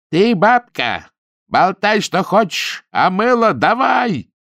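slow, high-pitched shouting. Ninka grabs the old woman and speaks right into her ear: shouting into someone's ear. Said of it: "ухватила старуху за грудки и закричала ей в самое ухо".

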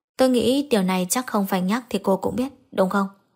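ordinary delivery

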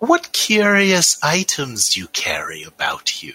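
flabby, swooping, toad-like creature voice. Game master voicing a hunched toad-like creature questioning the players: toad-like creature voice. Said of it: "like sort of flabby toad-like creatures. A red one and a blue one. Oh. Red one goes faster. As you walk by, a sort of hunched green form, very similar to them, but with like a big staff, comes and".

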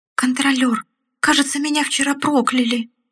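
quavering, trembling, high-pitched voice. A sick leprechaun answers the commander, in a trembling voice. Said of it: "произнес лепрекон дрожащим голосом".

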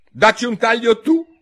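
very high, very loud, firm, decided, shrill shout. Narrator reads Alice answering the queen back, very loud and firm. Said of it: "disse Alice a voce molto alta e decisa".

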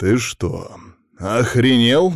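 calm, controlled, menacing growl. Narrator, holding the kid up by the scruff, speaks in a calm menacing growl. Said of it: "прорычал я спокойным, угрожающим голосом".

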